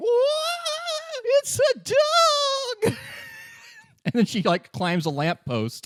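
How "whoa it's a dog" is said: very high, shrieking, stretched-out squeal. Retelling running across a girl, imitating a girl screaming. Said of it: "a girl who is screaming".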